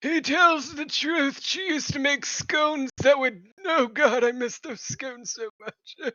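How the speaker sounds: weak, frail, feeble little character voice. The game master voices a frail character speaking to the players, frail, feeble voice. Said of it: "He's a frail little thing with a staff now. / He's a frail little thing with a staff now. / He's gonna stand up and kind of feebly make his way towards you. / This special One-Shot contains a party of".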